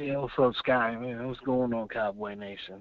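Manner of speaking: downcast, glum, low and quiet gloomy voice. A caller on the phone greeting the host and audience, gloomy. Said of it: "you sound gloom".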